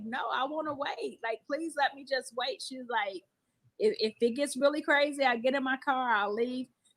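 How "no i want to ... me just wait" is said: mock tearful, crying pleading tone, quieter. Retelling what a woman said while crying, imitating crying pleading. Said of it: "she started crying".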